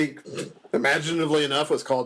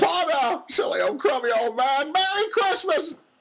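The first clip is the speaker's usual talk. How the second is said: put-on very high, drawn-out, drawling old-film voice; 14 semitones higher than usual. Speaker says he suddenly sounds like Jimmy Stewart; Jimmy Stewart impression. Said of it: "I suddenly sound like Jimmy Stewart".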